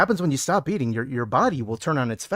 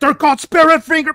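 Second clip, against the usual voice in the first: acted outraged, very high, very loud, shrill shouting; 14 semitones higher, 11 dB louder than usual. Imitating him correcting the wrong name of his move: mock angry retort. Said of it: "he would be so angry".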